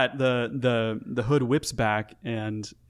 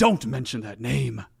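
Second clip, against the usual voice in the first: echoing, reverberant voice. Game master voices the voice heard inside the players' heads: echoing telepathic voice. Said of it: "It kind of echoes in your heads".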